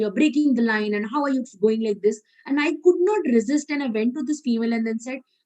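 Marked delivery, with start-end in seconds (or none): none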